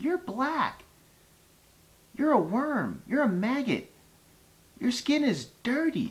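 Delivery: very high, swooping, squeaky little voice. Recalling a boy who insulted him as a child, the speaker quotes the boy: squeaky little voice. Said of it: "in this squeaky little voice".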